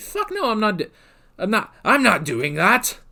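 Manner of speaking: animated dragon voice, wide pitch swoops, stumbling. Retelling what the dragon said when asked for a cure: John Hurt impression. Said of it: "That's my best John Hurt impression".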